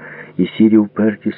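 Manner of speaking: plain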